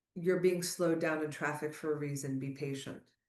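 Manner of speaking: ordinary talk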